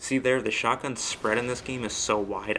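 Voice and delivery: ordinary delivery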